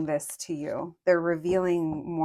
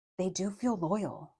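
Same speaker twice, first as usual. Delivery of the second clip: soft, hushed, barely-voiced confiding half-whisper; 3 semitones higher, 5 dB quieter than usual. Sharing something that feels almost unreal, half-whispered. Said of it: "I have to whisper that".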